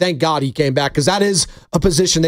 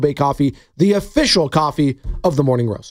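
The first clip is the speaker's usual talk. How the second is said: normal talking voice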